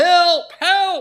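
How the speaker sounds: put-on child voice, high, loud, crying out.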